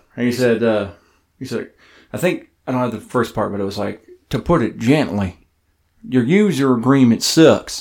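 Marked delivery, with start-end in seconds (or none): 4.3-7.8 imitated Southern American accent. Quoting a man's comment on a user agreement, in an imitated southern accent. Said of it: "I want to try to do it in his southern accent".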